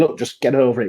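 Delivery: ordinary talk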